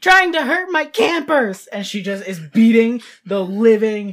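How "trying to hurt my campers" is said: very high-pitched, unhinged, furious screaming. Voicing a character beating a monster behind a counter: screaming in rage. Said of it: "just screaming".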